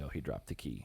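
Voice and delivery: very low, hushed whispered aside. Retelling a game-show player whispering to another player, retelling a whisper. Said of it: "she just like whispered to Fessy".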